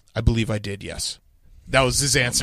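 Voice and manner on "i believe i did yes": put-on deadpan, much lower and quieter. Retelling Jim Harbaugh's answer to a question about the rivalry, imitating his deadpan. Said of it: "he just like deadpan just said".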